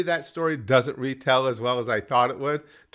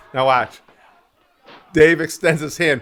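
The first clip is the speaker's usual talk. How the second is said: plain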